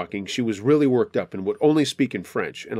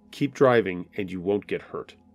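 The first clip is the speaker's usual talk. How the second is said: put-on dead, lifeless, toneless monotone; 4 semitones lower than usual. Retelling a threat while driving: imitating a totally dead voice. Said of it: "In a totally dead voice".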